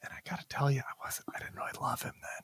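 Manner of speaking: hushed, soft whisper. Admitting a past dislike of a former colleague: whispering. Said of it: "We're just gonna whisper that".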